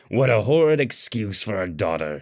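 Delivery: high, scraping, rasping voice. A father's corpse berates his daughter, rasping. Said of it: "it rasped".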